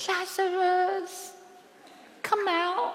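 whispered. The speaker shows how Jesus did not call out to Lazarus: whispering. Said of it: "not a whisper, he didn't go".

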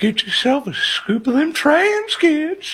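creepy high-pitched squeaking. Asked to play James Tallarico in an ice cream truck, do the Herbert the Pervert voice. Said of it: "be Herbert the pervert as James Tallarico".

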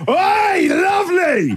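play-acted, very high, sing-song, swooping shout. Speaker retelling calling out to a passerby from a car window, retelling a yell. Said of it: "I yelled out".

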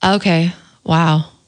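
dejected, disappointed. Reading the same short line in different emotions, now disappointed. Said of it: "Now we have disappointed".

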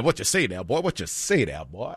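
low, soft cartoon rooster voice with swinging pitch. Talking about favorite cartoons, doing a Foghorn Leghorn voice. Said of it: "Give me Foghorn that".

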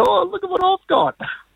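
squeaky, very high dog voice. Retelling how the dog trotted down the street with a stolen banana: voicing the pet dog. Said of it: "wagging his tail going".

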